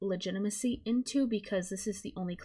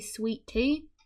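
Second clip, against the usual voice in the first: put-on Southern US accent; 3 semitones higher than usual. Showing listeners how an accent reveals being from the south, southern us accent. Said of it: "if I say sweet tea in an accent like that".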